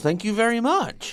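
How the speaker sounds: sarcastic tone. Replying after being called boring and pathetic: sarcastic. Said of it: "I was being sarcastic".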